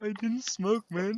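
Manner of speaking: put-on weepy, tearful blubbering, high and drawn-out. Imagining a friend walking home at night in tears: mock crying. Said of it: "tears saying".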